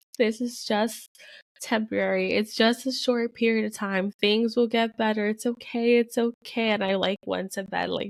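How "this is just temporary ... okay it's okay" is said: acted tearful crying speech, higher pitch. Retelling crying alone at the kitchen sink, reenacting own past crying. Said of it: "and I remember just crying, like".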